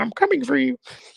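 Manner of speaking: very high cartoon frog-puppet voice. Taunting someone about a rival, imagining him speak, Mahomes's Kermit voice. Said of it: "in his Kermit voice saying".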